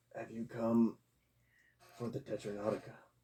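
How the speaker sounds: soft, hushed croaky voice. Narrating a dark room as one of the figures speaks to the group, croaking. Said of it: "one of the figures croaks".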